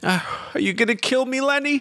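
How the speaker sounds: begging, pleading, very high-pitched voice. A game narrator voices a wounded man pleading with the player's character, pleading. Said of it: "He's pleading with you".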